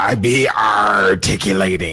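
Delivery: low put-on pirate voice. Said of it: "some pirate talk from last week".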